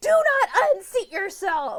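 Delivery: high, slow, spaced-out bellowing yell. Retelling a book scene where he yells at her: imitating someone yelling. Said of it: "He's yelling at her".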